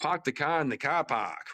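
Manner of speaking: put-on Boston accent. Joking about accents in a group, trying a Boston accent; fake Boston accent. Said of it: "if I try to do Boston accent".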